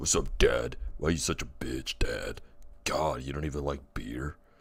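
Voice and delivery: put-on macho, muscular-sounding tough-guy voice. Imagining a future son who scorns his father: macho ripped son voice. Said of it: "My son comes out all, all ripped. He's like".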